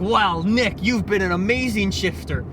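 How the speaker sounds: normal talking voice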